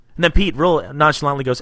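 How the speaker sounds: usual speaking voice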